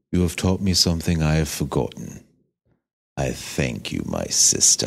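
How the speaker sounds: very low voice with British-leaning accent. Answering a challenge to do the voice too: British-sounding Dream voice. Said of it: "I gotta think of a line".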